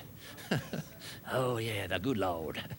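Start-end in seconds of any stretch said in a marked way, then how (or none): 1.3-2.6 exaggerated, heavy Southern accent. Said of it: "I talk in a Southern accent".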